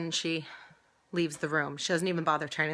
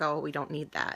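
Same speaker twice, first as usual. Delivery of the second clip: muttered mumble under the breath. Retelling what a nurse said: imitating a mumble under the breath. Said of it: "mumbled under her breath".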